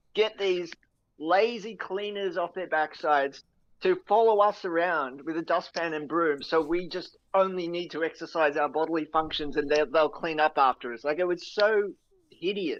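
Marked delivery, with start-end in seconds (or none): none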